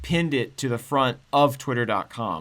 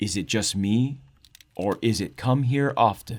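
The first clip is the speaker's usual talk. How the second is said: heavily sultry, seductive, charming voice; 4 semitones lower than usual. Reading aloud a pickup line sent in by a listener: sultry Gaijina voice. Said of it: "in my best sultry Gaijina voice".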